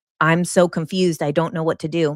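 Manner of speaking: usual speaking voice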